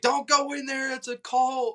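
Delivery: loud, high yell.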